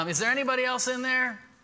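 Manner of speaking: put-on Southern accent. Retelling a man yelling to people at a burning house, put-on Southern accent. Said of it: "He's got a really good Southern accent".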